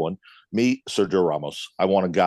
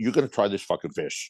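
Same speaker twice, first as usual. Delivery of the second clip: put-on voice, quieter; 4 dB quieter than usual. Speaker retelling how a man insisted they try the fish: retold command, not a question. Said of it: "the way he said it, it wasn't like a question".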